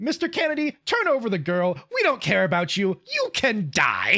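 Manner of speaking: put-on swooping, bratty little kid voice. Quoting a scene from the original game: imitating Ramon's bratty kid voice. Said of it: "he talks like a bratty little kid".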